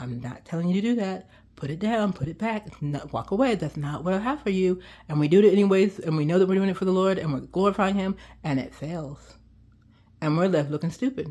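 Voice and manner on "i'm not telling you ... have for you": quiet, hushed, softly spoken voice. Speaking about doing things for the Lord, quietly voicing the Lord. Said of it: "the Lord's quietly saying".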